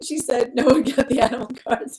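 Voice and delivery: words breaking up with laughter. Reading out a comment about animal cards: laughing while talking. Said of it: "I'm laughing too hard".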